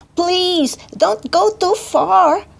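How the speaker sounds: high, drawn-out calling cry. One character calls after another who is chasing a leaf, crying out. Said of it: "cried Pretzel".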